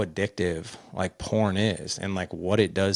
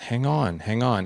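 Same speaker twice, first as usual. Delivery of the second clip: put-on distracted, preoccupied, drawn-out, dismissive tone; 3 semitones higher than usual. In a plane boarding line, a mom on her phone answers her daughter, imitating a distracted mom. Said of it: "just wouldn't give her daughter any attention".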